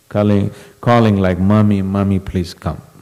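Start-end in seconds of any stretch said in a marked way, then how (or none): 1.4-2.8 put-on tearful crying like a baby. Retelling how a devotee called for his mother: imitating crying like a baby. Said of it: "literally crying like a baby, calling like".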